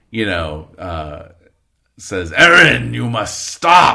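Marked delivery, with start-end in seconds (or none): 2.3-3.9 booming, resounding angelic voice, much louder. Running a game, the speaker voices a beautiful, terrifying creature addressing a player: booming, almost angelic voice. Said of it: "in this booming, like almost angelic voice".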